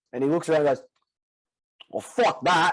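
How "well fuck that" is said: bad, butchered put-on New Zealand accent, pitched higher. Retelling what a Kiwi bloke at check-in said: bad Kiwi accent. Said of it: "I'm gonna butcher the accent".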